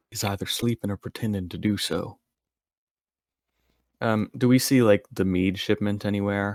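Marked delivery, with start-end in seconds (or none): 0.1-2.1 hushed whisper. A tabletop player speaks in character to the group near a snoring giant, whispering. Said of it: "and I'm whispering this".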